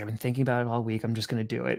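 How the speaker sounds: low, soft, fast muttering to himself. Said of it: "the bald guy starts muttering to himself".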